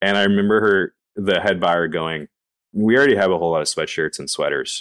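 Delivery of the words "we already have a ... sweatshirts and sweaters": very dry deadpan, no audible reaction. Recalling the meeting, quoting the head buyer's reply: imitating deadpan head buyer. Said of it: "just like deadpan".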